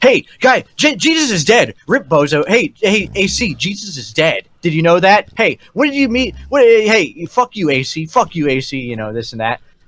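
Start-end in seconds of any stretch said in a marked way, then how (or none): 0.0-8.8 high, jeering, taunting, heckling ranting outburst. Retelling being taunted on a voice call: imitating Jalen's taunting outburst. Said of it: "a spurg out, uh, in voice where Jalen's, like, trying to shit on me".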